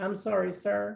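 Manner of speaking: put-on Texas accent, fully committed. Imagining the other person cooking, the speaker voices them in a full Texas accent. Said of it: "with with a full Texas accent".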